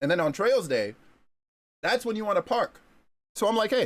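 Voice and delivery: talking with mouth full. Chatting to listeners mid-meal, talking with mouth full. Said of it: "talking with food in my mouth".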